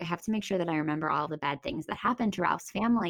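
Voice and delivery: ordinary delivery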